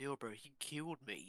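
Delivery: hushed voice. Pulling Bill aside in character after a fight, whispering. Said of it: "I whisper".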